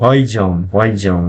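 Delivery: Russian pronunciation. Speaker repeats the Russian word for let's go: more correct Russian accent. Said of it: "with maybe a more correct Russian accent".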